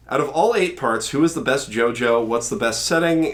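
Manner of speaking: ordinary talk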